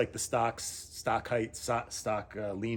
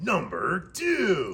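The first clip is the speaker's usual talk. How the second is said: put-on loud, swooping radio-announcer voice; 6 semitones higher, 6 dB louder than usual. Counting through a list of items, put-on radio voice. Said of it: "That's my best radio voice".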